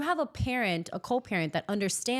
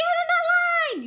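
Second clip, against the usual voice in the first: shrill, piercing, high, loud coach's scream; 7 dB louder than usual. Retelling what is yelled at dancers at competitions: imitating own screaming at dancers. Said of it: "If you hear me screaming at my dancers".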